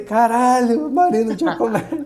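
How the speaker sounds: acted-out stunned, excited, high freaked-out shout. Retelling seeing a legend pass during a first race: retelling own shout. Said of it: "eu gritei real em português".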